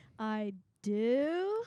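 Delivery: do said with a rising, questioning lift. Recalling how their wedding vow was said: rising on do like a question. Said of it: "It just had that inflection at the end".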